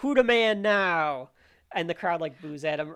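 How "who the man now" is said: put-on very slow, deliberate, drawn-out taunting shout. Retelling a wrestler shouting at the booing crowd: imitating Farouk shouting at the crowd. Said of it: "he shouts at the cra-".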